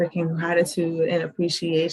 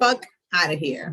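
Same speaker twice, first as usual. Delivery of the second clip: put-on New Jersey accent. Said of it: "Say it in a New Jersey accent".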